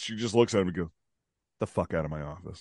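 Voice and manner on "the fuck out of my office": very low, bone-dry, dismissive deadpan voice. Reenacting a doctor telling a patient to leave: imitating a deadpan retort. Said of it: "straight face".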